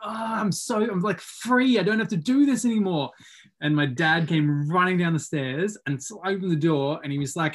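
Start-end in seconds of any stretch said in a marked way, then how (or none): 0.0-3.1 high, full-lunged shout at the top of lungs. Retelling throwing the controller at the ground, re-enacting yelling at the top of lungs. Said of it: "I just yelled at the top of my lungs and was just like".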